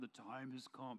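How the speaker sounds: deep, guttural movie-trailer narrator voice. Describing movie trailers, the speaker imitates the narrator's deep guttural trailer voice. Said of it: "the deep guttural voice".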